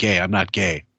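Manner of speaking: put-on, mock-desperate tone. Mocking a man who is trying way too hard, imitating a desperate denial. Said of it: "do you hear that desperation in his voice?".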